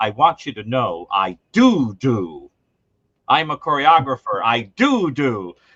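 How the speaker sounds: play-acted riled-up, offended, angry man's voice. Speaker retells a man who took offense at a remark, imitating the angry man. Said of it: "the guy got very angry".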